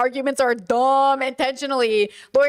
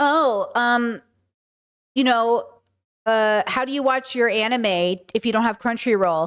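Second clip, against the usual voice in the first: normal talking voice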